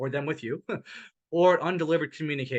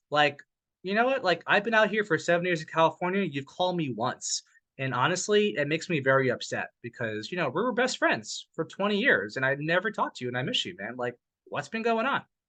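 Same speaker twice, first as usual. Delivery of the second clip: ordinary delivery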